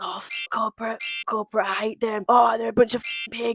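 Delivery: whispered, hushed grumbling under the breath. Recounting what happened, the speaker quotes a woman: retelling a whisper. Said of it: "whispering under her breath".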